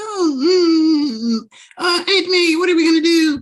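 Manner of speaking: very high, loud crying whine with stretched oh. Speaker complaining about Tom always whining: mock-whiny Tom impression. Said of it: "He has a whiny voice, like".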